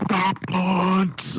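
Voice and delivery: mock vendor calling out, high yelling hawker voice. Telling about a guy in a concert line, imitating him yelling. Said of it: "he's yelling".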